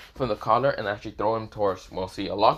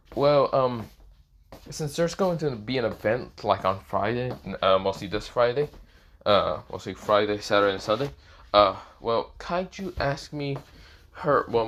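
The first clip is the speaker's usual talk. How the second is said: ordinary talk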